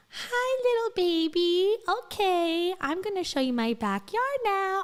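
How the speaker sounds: put-on very high-pitched, babyish baby-talk voice. Speaker mocks how a woman talks, in a babyish high voice. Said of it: "the voice gets really babyish and really high".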